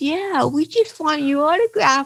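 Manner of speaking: put-on high, keen child voice.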